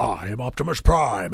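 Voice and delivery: very low, deep, slow character voice. Speaker says they can only briefly do an Optimus Prime voice. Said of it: "I can only do in the impression universe, like".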